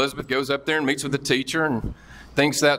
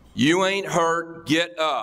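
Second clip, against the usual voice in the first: slow, stern, mock no-nonsense tough tone; 3 semitones higher than usual. Advising what to say when she falls, saying it in a stern, loud voice. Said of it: "in a stern, loud voice".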